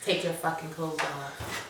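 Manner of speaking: low, quiet fatherly voice. Quoting Fitz's line to her in a recap: deep daddy voice imitating Fitz. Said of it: "with his deep daddy voice".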